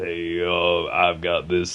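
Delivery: very low, deep, slow growling voice. Describing an uncle's voice: Sling Blade impression. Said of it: "Sling Blade, which I'm obviously impersonating".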